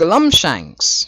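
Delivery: yelled high and badly. Trying the Chaos voice a second time and giving up: failed Chaos voice attempt. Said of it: "I can't Chaos voice".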